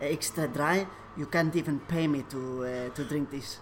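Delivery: put-on Polish accent. Asked to redo a man's quote, the speaker does it in a Polish accent. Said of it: "You can do the Polish accent better".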